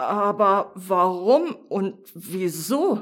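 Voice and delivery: very slow, halting, stammering speech. The little mouse, understanding nothing, asks the bright thing, stammering. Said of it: "stotterte die kleine Maus".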